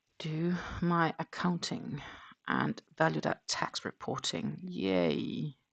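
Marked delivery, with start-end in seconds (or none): 4.6-5.5 sarcastic, joyless, unenthusiastic fake cheer. Mentioning accounting and tax reporting to do this week: sarcastic unenthusiastic yay. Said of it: "Do I sound very happy about that?".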